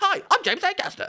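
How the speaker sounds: put-on very high, loud, eager little-kid voice.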